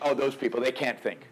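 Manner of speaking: ordinary talk, nothing marked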